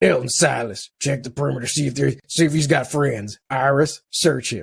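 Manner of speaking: put-on gruff voice. Retelling a scene where Felix comes up behind someone, in a gruff voice. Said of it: "with his gruffy voice".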